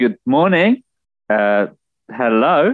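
said loudly. Game character greeting a sleeping companion in the mess hall: loud greeting. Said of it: "loudly I would say".

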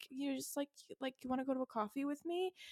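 very nervous, fumbling, high-pitched delivery. Retelling a book scene where Randall asks her to coffee: imitating nervous Randall. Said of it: "He's, like, so nervous".

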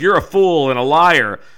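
play-acted, very loud, indignant, offended outburst. Retelling an almanac feud, the speaker voices the rival's reply, acting out offended indignation. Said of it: "Titan Leeds was like super offended".

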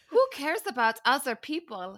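very thick fake German accent. Quoting a man whose accent the group discusses: very thick German accent. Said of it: "very thick German accent".

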